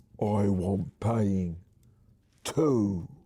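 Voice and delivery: husky-sounding voice. Reading an interactive story aloud as Ivy grabs the reader's throat, in Ivy's husky voice. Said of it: "says in a husky voice".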